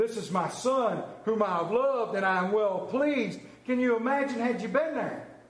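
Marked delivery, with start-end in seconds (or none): 0.0-3.4 grand, magnificent, majestic heavenly voice. Retelling the baptism story, the speaker voices the heavens speaking in a magnificent voice. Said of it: "that magnificent voice go".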